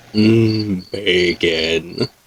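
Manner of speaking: sleepy, groggy, deep low man's voice. Narrating a groggy woman sitting down at the table, groggy deep masculine voice. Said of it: "like this deep masculine voice for no real reason".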